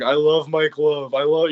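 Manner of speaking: mock raspy, drunken voice. Retelling a story of Dennis grabbing a microphone, doing a drunken raspy Dennis impression. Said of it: "like with his like raspier voice".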